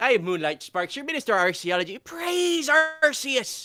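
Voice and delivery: fake Irish accent throughout. Introducing oneself as Minister of Archaeology on Anime Church, in a put-on Irish accent. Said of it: "That sounds so much better in an Irish accent".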